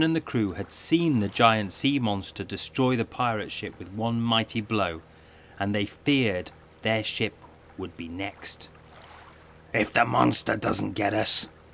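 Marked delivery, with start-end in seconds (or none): 9.7-11.5 low muttered mumbling. The captain, fearing the sea monster will strike their ship next, muttering. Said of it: "muttered the captain".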